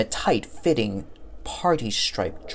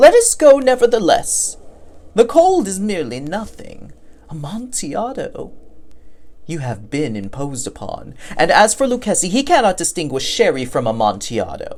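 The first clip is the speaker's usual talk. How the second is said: tipsy, snobbish, dismissive, boastful, pitched higher voice; 6 semitones higher, 3 dB louder than usual. Reading a story aloud, the narrator voices Fortunato's reply: drunk Fortunato voice. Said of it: "for he had been drinking much. The man wore motley. He had on a tight-fitting party-striped dress, and his head was surmounted by the conical cap and bells. / He prided himself on his connoisseurship".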